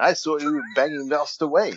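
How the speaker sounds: put-on high woman's voice. Recalling a comedy bit from their show, doing a character's voice. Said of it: "when I start doing the voice of, Miss Vale".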